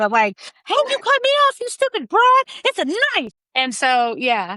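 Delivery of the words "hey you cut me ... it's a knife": very high, pissed-off angry yelling. Retelling being cut off in traffic by another driver, acting out road rage. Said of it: "when I'm in traffic pissed".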